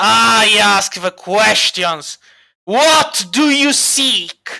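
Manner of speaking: snarling deep baritone voice. Voicing the creature that interrogates a player, snarling deep baritone. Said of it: "It actually kind of snarls in a deep baritone voice".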